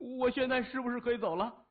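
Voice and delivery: very high-pitched, anxious, worried, impatient, urgent voice. A narrator reads Xu Dagen's line in a tense scene, anxious and urgent. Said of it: "徐大根着急地说".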